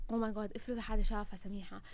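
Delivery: ordinary delivery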